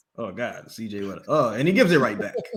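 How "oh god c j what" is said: very low, soft, exasperated broadcaster impression. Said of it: "He's like this".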